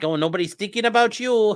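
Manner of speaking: high, put-on Upper Midwest Minnesota accent. Mocking a speaker's concern for agency staff: mock Minnesota accent. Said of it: "she sounds like she's from Minnesota".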